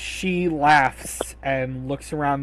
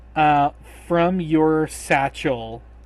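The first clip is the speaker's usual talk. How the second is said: usual speaking voice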